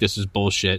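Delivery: ordinary talk, nothing marked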